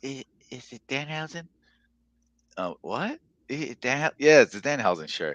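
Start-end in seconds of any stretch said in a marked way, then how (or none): 0.0-1.5 timid, introverted, odd, soft, hesitant mumble. Retelling a man approaching them over their Danhausen shirt, imitating a shy introvert's weird voice. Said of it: "in this low, like, you know, super introvert, like, you know, like weird voice".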